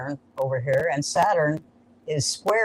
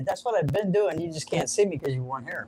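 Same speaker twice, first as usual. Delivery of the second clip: ordinary talk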